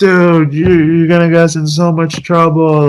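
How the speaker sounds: put-on hissing, yelling voice. Speaker retells a partner yelling at them after coming through the curtain: retelling a partner's yelling. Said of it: "my partner's like yelling at me".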